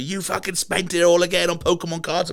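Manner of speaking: shrill yelling. Retelling a money argument at home, imitating someone shouting. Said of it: "She's shouting at me".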